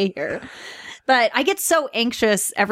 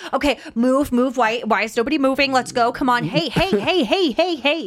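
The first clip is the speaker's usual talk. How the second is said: mock neurotic ranting, higher pitch; 3 semitones higher than usual. Retelling how an actor improvised his lines: imitating a neurotic character. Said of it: "Really neurotic".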